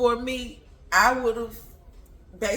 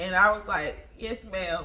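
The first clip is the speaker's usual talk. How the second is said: plain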